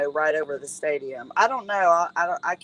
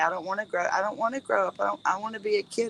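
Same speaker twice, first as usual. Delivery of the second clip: imitated child crying, higher and quieter; 4 semitones higher, 3 dB quieter than usual. Recalling a girl who cried every birthday, imitating a crying child. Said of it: "she cried every year because she would say".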